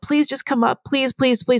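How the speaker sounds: put-on high, pleading, begging toddler-like voice. Retelling how a man begged someone to come up: imitating someone begging. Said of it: "he's begging".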